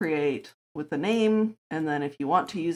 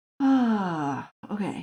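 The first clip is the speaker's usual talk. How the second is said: yawning speech with "ah" drawn out; 4 semitones higher than usual. Tired after working on an issue until six a.m., yawning. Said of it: "Sorry, I'm yawning because I am tired".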